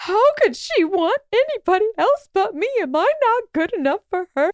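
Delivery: play-acted tearful crying, high and sobbing. Telling a story, speaker quotes a betrayed man, imitating a man sobbing. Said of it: "this guy is sobbing".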